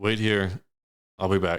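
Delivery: plain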